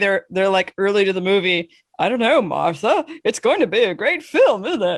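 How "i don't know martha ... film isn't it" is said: put-on elderly old man voice. Imagining an old couple arriving early to a movie, doing an old man voice. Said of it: "I wanted to say that voice".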